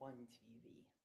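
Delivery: very soft, hushed whisper. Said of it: "Why is he whispering?".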